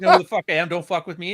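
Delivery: mock menacing shouted delivery, aggressive and threatening. Describing a man yelling at people in a CVS, imitating aggressive threatening yelling. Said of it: "he's yelling at you like".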